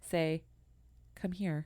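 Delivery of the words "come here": quiet, soft, authoritative, commanding voice. Retelling a story of a voice heard from the garage, imitating a soft, commanding voice. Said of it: "a soft but commanding voice, which I'm going to try to imitate my best".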